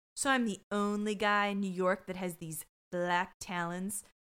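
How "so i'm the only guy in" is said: usual speaking voice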